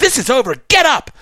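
play-acted shrill yell, very high pitch. Retelling a woman opening the cabin door and yelling, imitating her yelling. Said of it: "just starts yelling at me".

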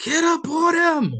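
very high, very loud, shrill scream. Retelling a basketball story, the man on the sideline shouting instructions: imitating someone screaming. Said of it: "Phil's on the sideline screaming".

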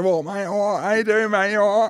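loud, very high put-on geezer voice. Showing someone how a geezer sounds and asking if it is right, use a geezer accent. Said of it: "Does that sound like geezer or not?".

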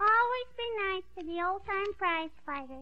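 ordinary delivery

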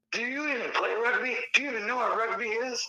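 irate, high-pitched, furious rant. Recalling a dad who unleashed on you while refereeing: imitating an angry dad. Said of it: "this dad just like went unleashed on me".

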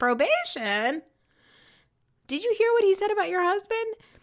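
shrill, loud, totally flabbergasted outburst. Retelling a scene from the show, imitating Candy's flabbergasted voice. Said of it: "I love Candy's, uh, flabbergasted voice".

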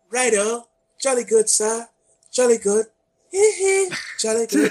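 put-on British accent. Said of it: "a British [name]".

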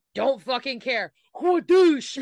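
mock careless yell, loud, high and punchy.

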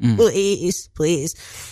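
mock crying, tearful pleading voice. Describing a tobacco craving while in hospital, the speaker is imitating crying and begging. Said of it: "I'm like crying over it".

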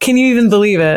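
ordinary talk, nothing marked

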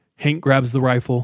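ordinary talk

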